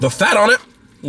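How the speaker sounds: voice cracking and breaking upward. Reviewing a chain-restaurant steak when the voice suddenly cracks. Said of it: "my voice cracked".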